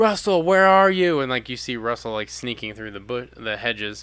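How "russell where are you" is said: put-on desperate yell, higher and louder. Retelling a movie scene where the villain calls out: imitating desperate yelling. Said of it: "just desperately yelling".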